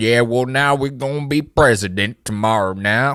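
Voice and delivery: put-on Southern accent, unhinged, a bit crazed ranting. Describing a show's politician, then imitating his speech: Frank Southern accent impression. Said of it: "this Southern accent. He's like".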